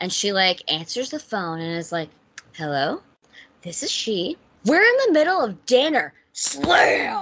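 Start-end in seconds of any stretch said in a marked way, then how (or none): 2.5-6.1 mock, weirdly controlled, hostile tone, pitched up. Retelling how Gail answers the phone at dinner: imitating a weirdly controlled hostile tone. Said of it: "weirdly controlled, hostile vibe".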